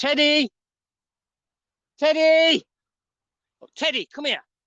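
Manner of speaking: very high, loud, worried shouting. Calling out for teddy, worried he has gone into the field, shouting. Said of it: "Sorry for the shouting there".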